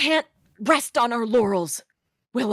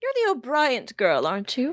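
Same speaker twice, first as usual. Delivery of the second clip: lofty, haughty, swooping superior condescension. Game master voicing a woman addressing the player character, looking down her nose. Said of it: "She looks down her nose at you and goes".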